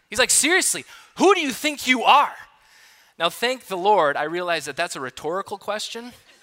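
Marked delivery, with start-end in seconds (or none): 0.3-2.4 angry, high-pitched scolding tone. Retelling a leader scolding a late youth group member: imitating an angry leader. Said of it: "He is so angry".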